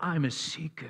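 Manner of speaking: very soft, hushed, posh-sounding voice. A pastor tells the audience to say this to a neighbor, posh way of saying it. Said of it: "say it like in a posh kind of way".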